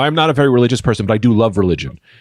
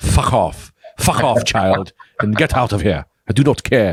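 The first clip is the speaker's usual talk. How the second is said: put-on slow, gruff, dismissive boss voice. Retelling offering milk to the boss, who answers: imitating the boss. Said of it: "That was almost a good impression".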